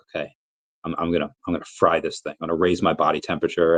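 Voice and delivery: normal talking voice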